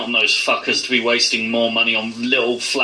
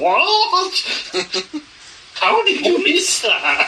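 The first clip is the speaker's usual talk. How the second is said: very high, swooping screech with drawn-out what. Retelling an out-of-character reaction to a chauffeur's greeting, screeching.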